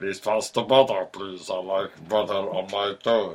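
big, showy wrestler voice. Demonstrate his very distinctive way of talking for your listener, in an Andre the Giant impression. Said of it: "that's how he talked".

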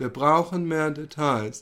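acted flat bored voice. Retelling a scene from Didi der Doppelgänger, imitating Didi's unenthusiastic monotone. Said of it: "er macht das so unenthusiastisch".

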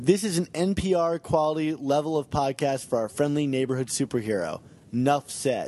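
ordinary delivery

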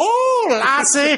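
put-on bizarre, thick, over-the-top Irish accent, very high. Telling someone about a weird movie, mimic its lead in Marlon Brando's bizarre, exaggerated Irish accent. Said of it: "he's got this bizarre, exaggerated Irish accent".

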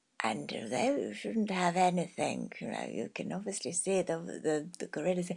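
quiet storyteller voice. Retelling a British naturalist's words, whispering David Attenborough impression. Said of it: "saying in a whispering voice".

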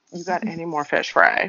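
plain

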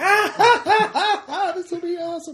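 acted spirit voice, hard laughter. Voicing a spirit who is laughing himself senseless: Coyote laughing senselessly. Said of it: "Coyote's laughing himself senseless right now".

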